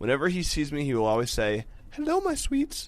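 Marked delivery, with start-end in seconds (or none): 1.9-2.9 put-on very high, sweet babyish voice. Reading a letter, quoting how the writer's boyfriend greets her, in a baby voice. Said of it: "in a baby voice".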